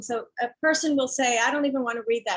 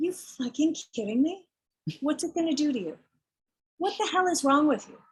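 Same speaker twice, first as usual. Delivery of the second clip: mock furious, angry voice, higher pitch; 3 semitones higher than usual. Retelling own reply to people scared to read the book: imitating a furious retort. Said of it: "I'm furious at that response".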